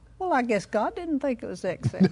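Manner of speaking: ordinary talk, nothing marked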